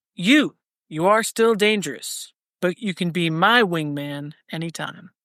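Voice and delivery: ordinary delivery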